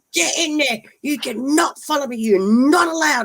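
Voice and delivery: shrill, very high, forceful yell. Retelling ordering an animal away: imitating her own yelling. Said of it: "I'm yelling at this frickin'".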